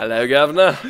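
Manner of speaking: poor put-on English accent. During a game, greeting the governor in a horrid english accent. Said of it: "thou shalt not use horrid English accents".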